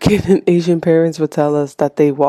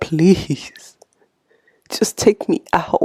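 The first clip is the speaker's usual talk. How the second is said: mock breathy, tearful whisper. Retelling a man in a cave begging god to kill him: imitating crying and pleading. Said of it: "literally crying and pleading".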